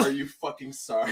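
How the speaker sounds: sudden, held-back, mild half-yelled outburst. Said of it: "I'm gonna yell out".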